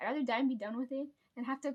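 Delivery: fast, rushed rant in one breath. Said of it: "I got that out in one breath".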